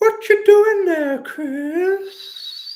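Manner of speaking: very high, very loud creepy voice. Counting down his bits, the speaker opens with his Herbert the Pervert impression. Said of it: "I might do Herbert the Pervert".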